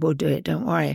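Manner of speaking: ordinary talk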